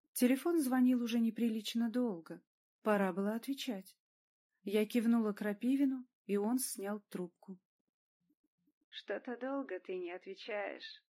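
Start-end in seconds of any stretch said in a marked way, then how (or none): 8.9-10.9 soft, smirking, sneering, nasty voice. A caller speaks as the phone is finally picked up; smirking, unpleasant voice. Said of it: "усмехнулся неприятный голос".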